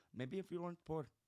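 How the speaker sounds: put-on Indian accent. Mocking someone's thought process in conversation, in an Indian accent. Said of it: "I do a great Indian accent".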